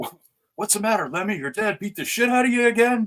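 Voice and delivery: shrill, very high-pitched hollering yell. Retelling riding past the scene on a moped, imitating Sal yelling. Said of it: "And he yells out".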